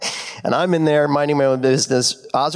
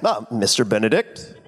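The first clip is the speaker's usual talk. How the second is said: regal, stately, deferential, respectful tone; 4 semitones lower than usual. Imitating David, who treats the speaker as higher: imitating David, regal.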